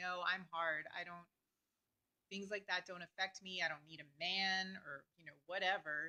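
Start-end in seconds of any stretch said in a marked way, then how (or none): none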